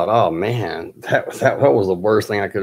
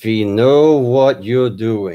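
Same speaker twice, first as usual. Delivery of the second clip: put-on heavy, thick German accent; 4 dB louder than usual. Retelling what a caller said on the phone, in a deep, heavy german accent. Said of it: "this like deep voiced, heavy German accent".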